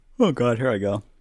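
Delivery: speaking while yawning. Apologizing for being sleepy, then speaking while yawning. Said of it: "Is yawning".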